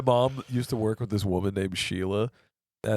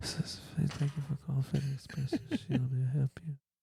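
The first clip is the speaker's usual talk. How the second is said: very quiet, hushed, soft, almost ASMR-like; 4 semitones higher, 9 dB quieter than usual. Retelling phone calls about their mom's work line: imitating a very quiet voice. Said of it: "It was so quiet".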